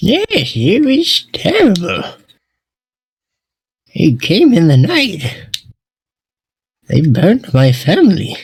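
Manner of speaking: high, gummy, toothless voice. Asked if they are refugees, a character answers: toothless voice. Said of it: "in his fucking toothless voice".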